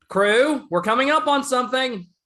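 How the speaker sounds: high, loud holler. Calling down to the crew on the lower levels, yelling down to the crew. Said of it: "just yelling down to the lower levels".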